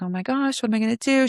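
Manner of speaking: put-on frantic, freaked-out, panicked cry. Retelling how a woman reacted when her escort ran late: imitating someone panicking. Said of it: "She's like freaking out".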